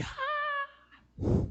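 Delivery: put-on very high, quiet child scream and squeal.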